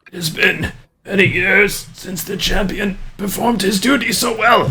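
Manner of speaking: very high, hoarse, ravaged raspy voice. A man in bedclothes with a torn-up throat speaks, in a raspy, torn-throat voice. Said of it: "but he says in a in a raspy voice".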